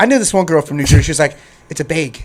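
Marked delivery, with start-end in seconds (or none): 1.7-2.2 put-on Wisconsin accent. Retelling what a girl once said about a bag: imitating a Wisconsin accent. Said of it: "don't put her in New Jersey talking like that".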